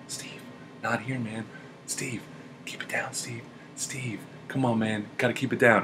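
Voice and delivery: soft, hushed whisper under the breath. Retelling hushing someone who kept giggling at everything, retelling a whisper. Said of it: "I have to whisper to him".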